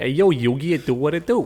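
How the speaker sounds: put-on Brooklyn New York accent. Explaining the dub's character names, doing Joey: Joey's Brooklyn accent. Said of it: "he always sounds like he's from New York".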